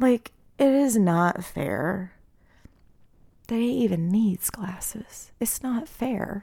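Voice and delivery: close to tears. Telling about a child's school worries, close to tears. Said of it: "I'm gonna start crying".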